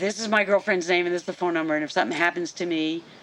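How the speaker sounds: very fast delivery. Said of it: "I said it really fast".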